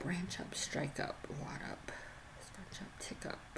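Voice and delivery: soft unvoiced whisper under the breath.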